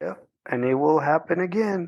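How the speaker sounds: said simply, understated and low-key. Retelling a remark made during a conversation at work: imitating Chav speaking very quietly. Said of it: "goes very quietly".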